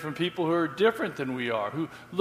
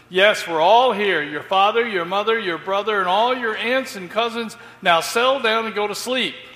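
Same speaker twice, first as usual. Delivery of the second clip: loud, high, fed-up, impatient shout; 5 semitones higher, 7 dB louder than usual. Telling a train story, speaker quotes a passenger who lost patience: retelling an impatient shout. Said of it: "finally lost his patience and shouted loudly".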